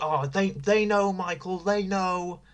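slow, high-pitched mock yell.

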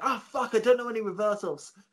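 mock yelling out, high-pitched shout. Retelling a wrestler caught in an armlock: imitating Madman Monson shouting. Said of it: "And he was shouting".

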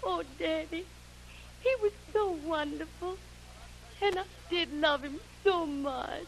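slow, tearful crying through every word. A daughter answering her father after saying goodbye, crying. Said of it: "Mary Bell, you're crying".

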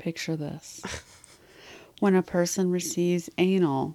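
seductive tone. Acting out a description for the other speaker, putting on a sensual voice. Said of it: "I'm going to get my sensual voice on".

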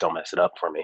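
hushed, half-whispered stage whisper. Retelling what the headliner said before the set: imitating Ellis Rodriguez half-whispering. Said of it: "he whispers in my ear".

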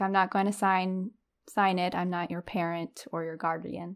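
ordinary delivery

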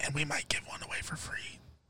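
soft, hushed whisper.

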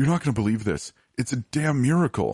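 high, fast, excited shout, words rattled off. The caller on the phone speaks to the just-woken narrator, yelling excitedly. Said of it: "Stan yelled excitedly".

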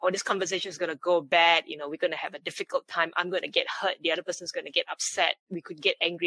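fast, rushed, spiraling, downward-tumbling delivery. Speaker demonstrates their saboteur thinking before a difficult conversation: speaking faster, spiraling. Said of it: "you can hear I'm speaking faster".

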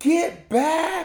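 mock very high-pitched screaming yell. Retelling yelling at a player after a bad pass: imitating own screaming. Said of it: "I'm, like, screaming".

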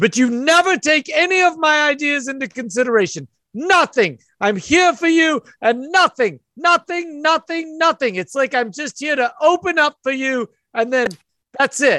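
high-pitched, very high screaming rant. Voicing a woman arguing backstage: woman yelling in an argument. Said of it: "you hear somebody screaming".

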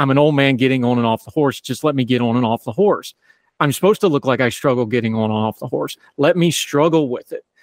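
ordinary talk

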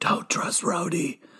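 yell-whispering. Acting out Fury's line from a film scene, yell-whispering. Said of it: "Yell whispering".

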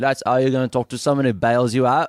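put-on full-on London Cockney accent. Redoing a character's line after remembering he is cockney: cockney accent. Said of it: "right, he's Cockney".

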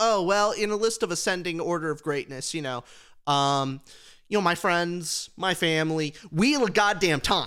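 ordinary delivery

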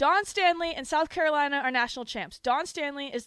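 very loud, high, pumped, excited yell. Starting a women's basketball segment with five minutes left, yelling. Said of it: "I don't know why I'm yelling".

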